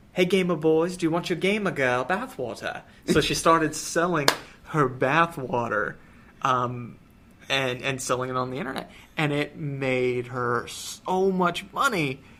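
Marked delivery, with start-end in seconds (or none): 0.1-2.8 put-on English accent in an English woman's voice. Retelling an english woman's online pitch to gamer boys, put-on english accent. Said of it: "so I'm gonna do an English accent".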